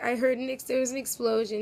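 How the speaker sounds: ordinary delivery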